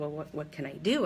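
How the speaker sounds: normal talking voice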